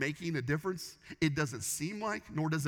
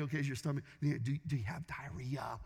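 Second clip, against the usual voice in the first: quiet delivery, slower and quieter; 4 dB quieter than usual. Acting out questioning someone with an upset stomach, retelling saying it quietly. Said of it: "you say it quietly".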